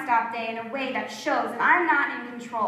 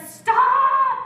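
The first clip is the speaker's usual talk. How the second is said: shrill, very high-pitched scream; 13 semitones higher, 7 dB louder than usual. Retelling a mom screaming at the driver to stop, imitating mom screaming. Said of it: "my mom screams".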